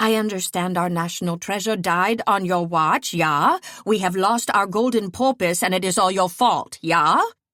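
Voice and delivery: put-on, best-attempt Swedish accent. Imitating the Swedish king on the phone: put-on Swedish accent. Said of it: "I unsheathe my best Swedish impression".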